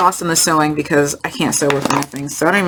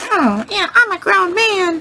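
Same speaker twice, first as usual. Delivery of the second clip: very high, drawn-out cartoon voice. Retelling a nervous young man who just turned twenty-one insisting he's grown: Mickey Mouse voice. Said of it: "in the Mickey Mouse voice".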